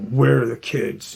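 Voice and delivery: stern, rough, hard-edged, aggressive tone. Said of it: "Just real aggressive".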